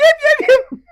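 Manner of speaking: very high, loud creature yelps like barks. Describing a helmeted being that makes noises instead of speech: imitating barking yelps. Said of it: "it chose to make noises like barks or yelps".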